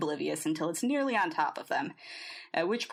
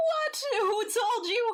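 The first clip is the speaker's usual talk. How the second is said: shrill, very high, alarmed and distressed squeak; 4 dB louder than usual. Narrating a story where Nocturne reveals Briar's secret, distressingly high voice. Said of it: "in a distressingly high voice".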